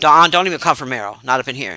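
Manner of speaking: low, very serious, even-keeled, dead-serious voice. Speaking to their chat, in their most serious voice. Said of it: "I'm saying this in my most serious voice".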